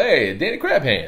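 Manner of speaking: over-the-top Italian accent. Speaker teasing the listener over a nickname, in an exaggerated Italian accent. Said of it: "I turned you into an Italian".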